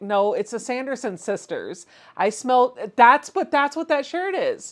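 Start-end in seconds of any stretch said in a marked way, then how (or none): none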